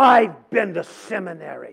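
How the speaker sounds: mock, slow, dismissive scoffing. Retelling the reply of the one behind the desk: imitating a scoffing tone. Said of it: "with that same tone".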